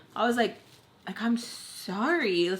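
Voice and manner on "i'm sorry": mock annoyed, attitude-laden, irritated tone. Retelling your own apology to people fighting over chips, an attitude-laden sorry. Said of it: "I have a little attitude with like how I said sorry".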